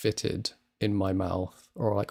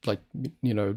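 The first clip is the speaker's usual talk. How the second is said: ordinary talk, nothing marked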